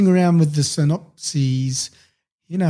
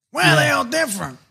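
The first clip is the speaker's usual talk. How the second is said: very high-pitched put-on woman's on-air voice; 10 semitones higher than usual. Retelling a story, the speaker quotes her in a Carol Webb impression. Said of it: "That's my new on-air voice for Carol".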